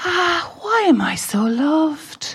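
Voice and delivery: very long, slow, drawn-out, high-pitched sigh. Recalling tucking the son into bed: imitating a sigh. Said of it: "you sighed".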